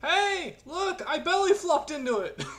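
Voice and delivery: very high, drawn-out shouted yell in character. Calling out in character to draw a water creature's attention: yelling in character. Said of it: "I'm gonna yell".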